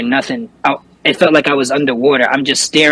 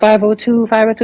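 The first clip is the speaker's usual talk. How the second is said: put-on frantic screaming, much higher; 8 semitones higher than usual. Retelling a woman calling for help about an apartment, imitating frantic screaming. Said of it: "she's like screaming her eyes out".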